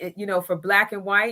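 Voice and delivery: ordinary talk, nothing marked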